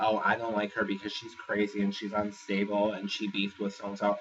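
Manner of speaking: ordinary delivery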